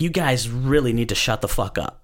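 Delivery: normal talking voice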